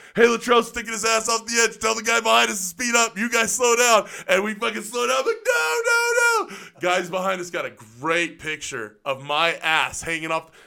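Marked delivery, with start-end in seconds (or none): 0.2-4.1 shouted loudly and quickly. Riding on a Humvee tailgate, [name] yells up to the driver. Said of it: "[name] yells up to the front".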